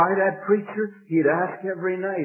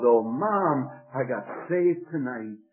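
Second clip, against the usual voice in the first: plain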